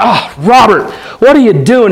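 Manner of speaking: disgusted, reproachful exclamation. Retelling how a former boss reacted to bad work: imitating someone in disgust. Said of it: "him in disgust going".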